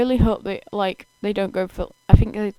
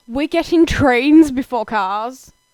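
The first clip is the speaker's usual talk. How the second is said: really loud, full-out, carrying voice; 4 semitones higher, 5 dB louder than usual. Reacting aloud, then apologising for the volume: said really loud. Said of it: "I said that really loud".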